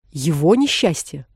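disdainful, scornful, contemptuous. In an argument, a man repeats a woman's words back to her, contemptuous. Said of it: "презрительно повторил Дарси".

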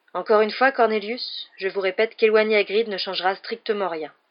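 plain reading voice

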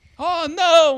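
high, loud, dramatic shouting cry.

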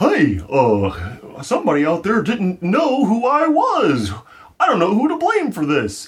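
very high-pitched character voice swooping around. Improvising a made-up scene, speaking as Grimace: Grimace voice. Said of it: "So you're saying if Grimace is like".

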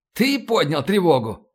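ordinary delivery

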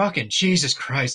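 put-on exasperated voice. Retelling a movie moment where Lillard is asked to save a son: imitating Lillard, exasperated. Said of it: "he's just exasperated".

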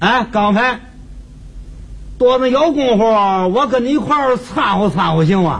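put-on very thick Tianjin accent. Imitating a Tianjin neighbor who calls your name and chats with you, in a very thick Tianjin accent. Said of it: "说话天津口音非常的浓".

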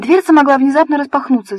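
hot, heated, objecting push-back tone. Polina retorts to Anne's worry about the closed cupboard door; heated objection. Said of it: "запальчиво возразила Полина".

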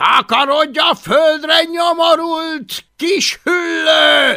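very high, slow, drawn-out roaring bellow. A character shouting at a small dragon, roaring. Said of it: "ordította plépofa".

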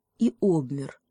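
ordinary delivery

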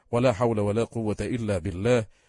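ordinary delivery

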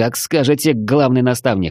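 plain

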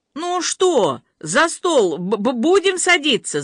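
high, fussy, petulant, capricious whine. A man with everything ready prods the others: whining capriciously. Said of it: "закапризничал Гарик".

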